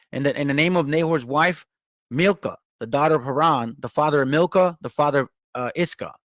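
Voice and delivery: ordinary talk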